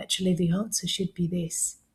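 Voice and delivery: worn-out, very weary, tired voice. Retelling a parent giving a child the answer on a live call: imitating a tired parent's voice. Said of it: "a very tired voice from a parent will say".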